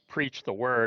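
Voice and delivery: ordinary talk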